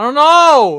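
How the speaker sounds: shrill, very loud, high outburst. Answering which King Kong film is meant: shouting. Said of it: "Don't have to shout".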